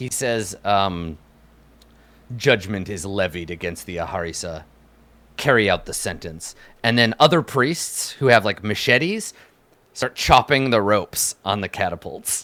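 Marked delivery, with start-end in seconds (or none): 2.4-6.5 low, quiet voice that still carries. Narrating a scene, speaker gives a priest's line in a quiet tone. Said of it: "he says in a quiet like tone".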